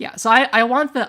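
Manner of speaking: sudden, accidentally too loud burst.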